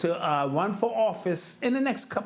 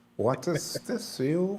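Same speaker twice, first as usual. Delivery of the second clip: slow, fake, put-on German accent. Chatting about Olympic medal counts, speaking in a put-on German accent. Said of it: "So are you talking in a German accent?".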